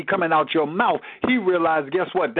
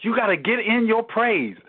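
plain

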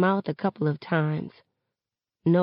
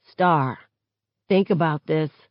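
ordinary delivery, nothing marked

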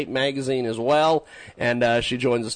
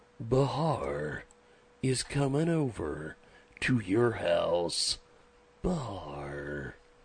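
low, hushed, dramatic movie-trailer narration voice; 4 semitones lower, 9 dB quieter than usual. Host announcing an upcoming guest, in the movie trailer voice. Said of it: "I still like doing the mu- the movie voice".

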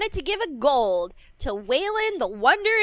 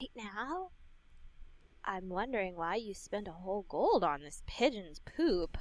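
low, very quiet whisper; 5 semitones lower, 14 dB quieter than usual. Leaning down from the saddle to another character, whispering. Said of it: "whisper at Jonathan and I go".

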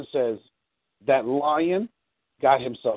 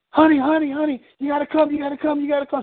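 mock frantic, panicked shriek, very high; 12 semitones higher, 3 dB louder than usual. Retelling a wife running back to the car for her husband, imitating a panicked scream. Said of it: "she runs back towards the car and screams".

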